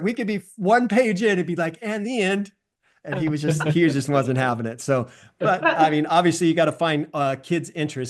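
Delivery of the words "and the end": put-on high, small two-year-old toddler voice. Retelling how a young son ended bedtime stories: imitating a two-year-old voice. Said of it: "in a two-year-old voice".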